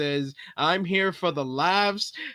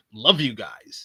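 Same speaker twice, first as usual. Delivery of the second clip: put-on insincere promo voice, lower pitch; 6 semitones lower than usual. Retelling a first promo back, not believing the words: imitating CM Punk's insincere promo. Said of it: "He's like".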